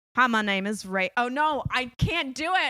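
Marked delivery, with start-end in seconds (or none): 0.2-1.1 put-on American southern accent. Asked for ten seconds of an Australian accent, speaker slips into a southern accent. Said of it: "I just went straight into my, a southern accent".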